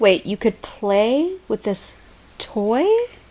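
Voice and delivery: slow, dry, sarcastic put-on wonder. Teasing the other speaker about playing with a toy: sarcastic. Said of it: "I'm being real sarcastic this episode".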